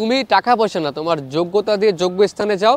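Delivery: ordinary talk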